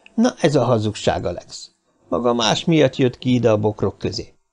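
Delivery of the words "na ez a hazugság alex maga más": plain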